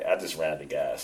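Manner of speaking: mock chuckling, laughing through the words. Retelling a friend's call about running out of gas: imitating someone laughing while talking. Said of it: "and he was laughing".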